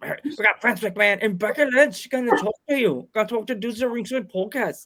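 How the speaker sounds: bad, horrible put-on Scottish brogue. Announcing guests for the dudes of ringside podcast, do a horrible scottish impression. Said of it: "That's a horrible Scottish impression".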